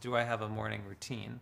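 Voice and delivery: normal talking voice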